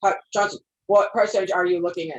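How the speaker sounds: robotic, flat reading-aloud voice.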